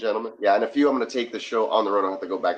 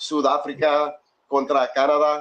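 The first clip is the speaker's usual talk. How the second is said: higher-pitched Spanish-accented voice; 6 semitones higher, 4 dB louder than usual. Streamer announcing the South Africa versus Canada knockout match: Spanish accent. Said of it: "I love the accent".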